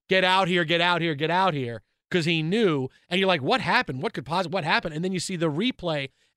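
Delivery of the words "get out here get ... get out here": screaming. Recalling a player's reaction to a leg break on the field, imitating Lawrence Taylor screaming.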